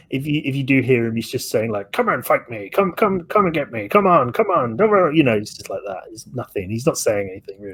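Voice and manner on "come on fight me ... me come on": put-on cartoon-style mutter, pitched higher. Show how a man who sounds like a cartoon character is just muttering, in a muttering Popeye voice. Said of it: "he's just kind of muttering".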